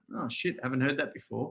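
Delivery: dry, mocking, fake-weary sarcasm. Retelling his own reply to clients' usual fitness goal: sarcastic. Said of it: "Into sarcasm".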